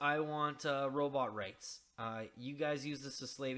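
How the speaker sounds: ordinary delivery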